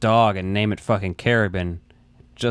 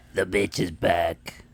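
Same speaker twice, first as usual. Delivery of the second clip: put-on heavy smoker's voice; 3 semitones lower, 4 dB quieter than usual. Quoting a movie ghost's line, imitating a smoker's voice. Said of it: "The smoker's voice".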